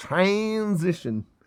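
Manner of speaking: slipped-in American-sounding accent. Talking through a card's meaning, repeating a word in an American accent. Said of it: "I had an American accent there for a minute".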